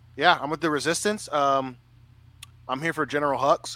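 plain

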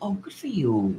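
mock patronizing, talking-down tone, soft and high. Imitating how people react to a smaller podcast platform: mock condescending tone. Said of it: "It's very condescending".

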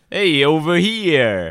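New York accent, drawn out. Asked to rank their New York accents, one guest goes first in a New York accent. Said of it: "rank our New York accents".

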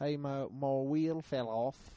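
chatty, casual put-on British bloke's accent. Speaker retells a man who came back inside after his wheel fell off, in British guy's accent. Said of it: "He was this British guy".

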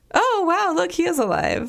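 mock offhand sarcasm, pitched way up and swinging. Retelling what a cop in the background said when he was brought in, imitating a sarcastic remark. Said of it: "so sarcastically".

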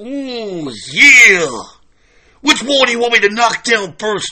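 long, stretched-out "ooh". Retelling how a wrestler burst into the room: Macho Man Randy Savage impression. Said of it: "the one and only Macho Man Randy Savage bursts into the room and says".

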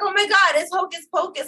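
high, excited, thrilled gushing.

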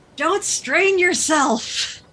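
very high, loud shout. Yelling in character up a rope to a climber above: yelling up a rope. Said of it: "I yell up the rope".

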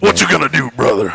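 loud, rough, gravelly pro-wrestling hype voice. Introducing the podcast crew, the host hypes up the fact checker in a WWE voice. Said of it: "That's a great WWE voice".

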